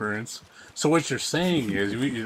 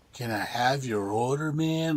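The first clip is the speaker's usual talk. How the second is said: put-on dazed, slow, spaced-out stoner drawl; 2 semitones higher than usual. Retelling a cartoon scene, a snack bar worker taking an order: imitating a druggie cartoon cashier. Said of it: "a fucking druggie".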